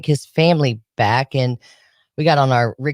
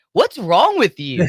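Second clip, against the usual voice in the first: put-on laughing speech, higher pitch; 6 semitones higher than usual. Retelling how someone reacted to the boxes: imitating someone laughing while talking. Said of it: "he just kinda started laughing like".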